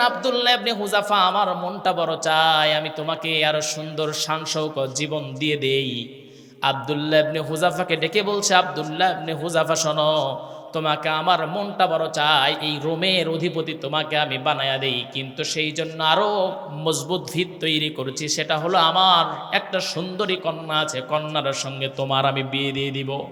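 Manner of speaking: low, soft, coaxing voice.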